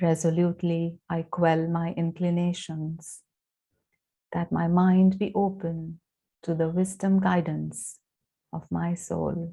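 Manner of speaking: soft delivery. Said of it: "and then softly".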